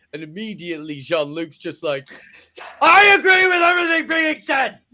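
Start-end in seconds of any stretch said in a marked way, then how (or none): 2.8-4.7 shrill, very high, full-volume yelling. Retelling a Klingon court scene, imitating Jean-Luc yelling. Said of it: "fucking yelling in everyone's faces".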